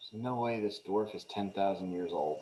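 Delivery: very quiet, low, hushed grumbling mutter under the breath. Narrating a scene, a character looks at the dwarf and at you: muttering under breath. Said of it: "he mutters".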